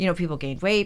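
usual speaking voice

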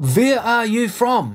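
put-on heavy German accent. Retelling what the german first officer said while picking the speaker up, thick german accent. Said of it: "he said in his thick German accent".

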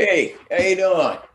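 put-on unconvincing tough Chicago accent. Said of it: "I can't do a Chicago accent".

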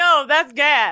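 put-on Jamaican accent. Retelling a man's answer to the speaker's question, in a put-on Jamaican accent. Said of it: "getting a Jamaican accent".

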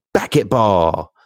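mock little kid's half-shouted call-out. Speaker retells how he yells at any ball he sees; imitating his yell. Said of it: "he will look at any ball now and yell".

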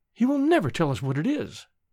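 ordinary delivery

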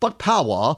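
put-on British accent, done for show. Introducing a website name with a joke voice, british accent. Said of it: "I'll do my British accent".

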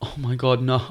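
put-on words squeezed out through laughter. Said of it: "while she's laughing, she's going".

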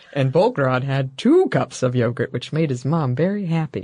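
calm, clinical put-on narrator voice. Retelling the narrator's line from a strange ad: imitating a calm, clinical narrator. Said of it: "calm, kind of clinical voice".

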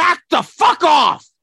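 very high, very slow, drawn-out, loud angry yell. Retelling a clash outside a restaurant, imitating Tom Hanks yelling. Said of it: "he sounded like him".

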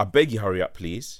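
ordinary talk

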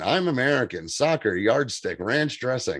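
put-on convincing, spot-on General American accent. Retelling how an actor switched into an american accent. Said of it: "he starts doing a perfect American accent".

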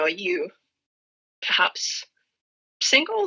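very awkward, fumbling, slow, swooping voice. Retelling how the speaker approached a bartender: imitating own awkward question. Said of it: "very awkwardly".

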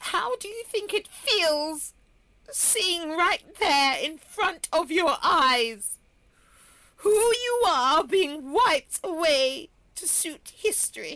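crying while talking. Admitting to crying over being wiped from history: crying while talking. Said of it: "Philippa, are you crying?".

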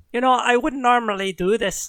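straight, unexaggerated Irish accent. Drace turns back to the players and speaks, in an Irish accent. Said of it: "I'm straight Irish now".

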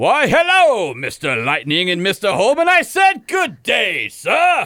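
cartoon rooster voice with a broad Southern accent. Asked to change the voice, reading the line aloud in a Foghorn Leghorn voice. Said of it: "let me read it in the voice that I think".

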